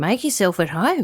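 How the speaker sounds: ordinary delivery, nothing marked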